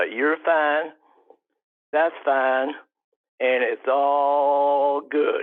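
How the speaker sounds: put-on Southern drawl accent. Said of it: "you have to hold all for three beats".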